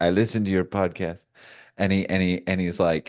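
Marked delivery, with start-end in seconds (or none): 0.0-1.3 put-on big, heavy Bolivian accent. Quoting a coworker from Bolivia who listened to the podcast, heavy Bolivian accent. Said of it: "speaks with this really big, heavy accent".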